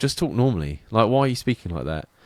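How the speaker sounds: ordinary talk, nothing marked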